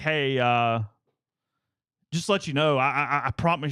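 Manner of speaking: play-acted nervous, flustered female voice, slow, scared stammer. Retelling how a woman stopped the runner in the neighborhood, imitating a scared, scatterbrained woman. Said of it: "almost like a little scared".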